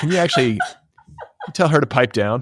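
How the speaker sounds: irritated, pointed tone. Retelling own request to a guest, imitating own bothered tone. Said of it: "that was my tone".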